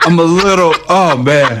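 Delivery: choked-up voice breaking into tears.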